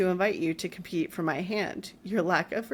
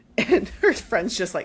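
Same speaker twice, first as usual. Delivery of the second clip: plain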